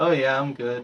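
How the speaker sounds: lifeless, dead-sounding voice. Asked if okay after being told they sound dead today, sounding dead. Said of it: "you sound so dead today".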